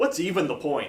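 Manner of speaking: put-on angsty, complaining teenage voice. Naming a kind of objection, the speaker says it like an angsty teenager. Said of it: "if you're going to say it like a teenager".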